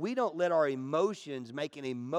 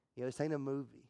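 ordinary talk

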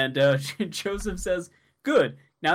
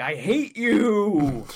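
mock all-out screaming, ending "you" stretched out; 2 semitones higher than usual. Retelling a scene where Polnareff, down on the ground, screams: Polnareff screaming, acted out. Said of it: "he's just screaming".

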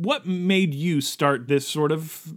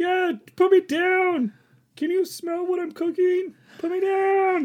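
squeaky, tiny little guy voice, very high. Describing a rock that talks when picked up, in a little guy voice. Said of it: "he's like a little guy on the bottom".

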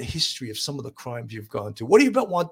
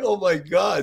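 high, mock amused outburst, laughing through it; 5 semitones higher than usual. Retelling hearing a greeting at a crime scene: retelling bursting out laughing. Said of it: "I would just bust out laughing".

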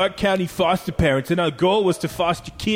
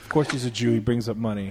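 ordinary delivery

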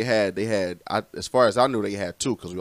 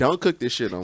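mock no-nonsense, straight-faced, blunt and flat tone; 4 semitones higher than usual. Imitating an aunt telling someone their food is bad: imitating aunt Trina, blunt. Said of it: "dead in your face like".

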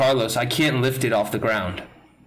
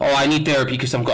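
ordinary talk

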